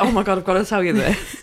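ordinary talk

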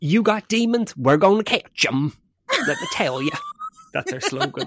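very high, loud, swooping Tennessee accent. Imagining regional demon-catching slogans: doing a Southern US accent. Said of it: "in southern southern Tennessee".

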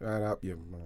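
mock muttering under the breath. Retelling a brother answering back: imitating muttering under the breath. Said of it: "racially abuse my mum under his breath".

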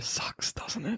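very quiet whisper, right into the ear. Voicing Adam into a healer's ear after being healed: whispering. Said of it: "Adam whispers into your ear".

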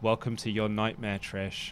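put-on flattest deadpan, low, flat monotone. Recapping a promo, quoting Charlotte's words to Trish, imitating Charlotte's flat monotone. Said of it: "in as monotone and as flat a way as possible".

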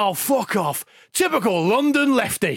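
put-on bellowing shout, slow and drawn out. Retelling what a Yorkshireman yelled when the offside flag went up: retelling a shout. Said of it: "shouted out".

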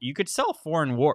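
voice cracking. Speaker talking to an audience, voice cracking. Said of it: "My voice just cracked".

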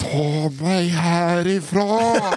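urgent, panicked, almost hissed voice. Retelling a panicked woman's hissed words: imitating a hiss. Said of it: "nästan väser fram".

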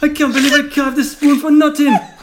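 put-on Jamaican accent. A character laments a spoon carved for nothing: Cool Runnings Jamaican accent. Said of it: "It's gone to Jamaica".

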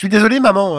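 put-on teenage boy voice. Playing a teenager apologizing to his mother: teenage boy voice. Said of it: "je prends ma voix d'adolescent".

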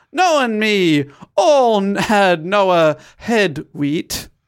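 put-on heavy, broad, slow, unhurried Yorkshire accent. Reading a character's dialect line aloud, in a thick Yorkshire accent. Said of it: "an incredibly thick Yorkshire accent".

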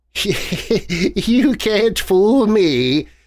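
cackling with glee. Reading a story aloud, a woman speaks to Gervais: gleeful cackle. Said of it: "she cackled gleefully".

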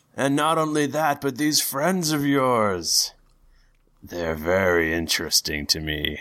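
loud booming deity voice. A god addresses one of his children and their friends, booming god voice. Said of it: "a booming voice over the loudspeaker going".

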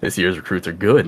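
quiet, amused snickering aside to himself. Narrating a man who watched the recruits fight, snickering to himself. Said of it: "just kind of like snickering to himself and goes".

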